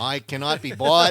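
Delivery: booming, slow, badly done delivery. Joking as a mayoral candidate: bad Kennedy impression. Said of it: "doing the bad Kennedy impression".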